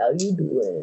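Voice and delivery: flirting in a deep voice. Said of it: "totally joeying it up".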